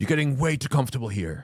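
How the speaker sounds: put-on hostile, furious shout. Retelling how a border officer screamed at the speaker: imitating an aggressive scream. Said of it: "screaming at me".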